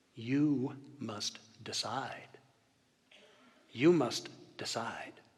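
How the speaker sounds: soft, quiet, hushed voice, barely there. Narrating the voice a praying child hears one winter morning, quiet voice. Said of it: "he heard a quiet voice say".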